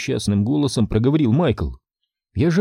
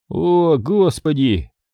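words spoken on a sigh; 3 semitones higher than usual. Narrator reads Michael's line after Tom's exclamation, sighing. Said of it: "вздохнул Михаил".

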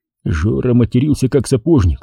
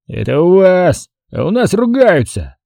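put-on boozy, drunken voice, pitched up; 7 semitones higher than usual. Narrator reads a patron retorting to the tavern keeper, drunken voice. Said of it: "пьяным голосом произнес он".

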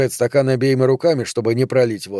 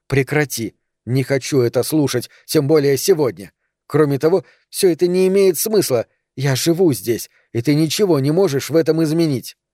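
plain reading voice

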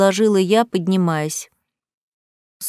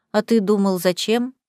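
plain

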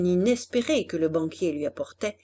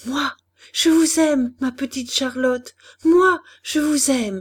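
stammering, stuttering, higher pitch; 5 semitones higher, 3 dB louder than usual. A man, his head in a whirl, speaks to Charlotte; stammering. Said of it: "il balbutia".

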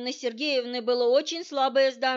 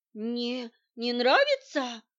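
timid, trembling, quavering babble. Reading Svetlana's reply to the investigator, in a trembling voice. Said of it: "дрожащим голосом пролепетала".

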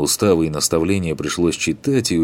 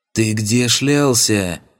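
furious, high, angry demoness hiss; 5 semitones higher than usual. Reading a fantasy story aloud, the narrator voices an enraged demoness: hissing angry demoness. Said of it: "прошипела демонесса".

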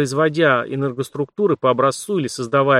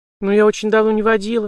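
flustered, helpless, bewildered faltering babble, pitched up; 8 semitones higher than usual. A young woman who has just been handed the keys answers, bewildered babbling. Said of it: "растерянно пролепетала девушка".

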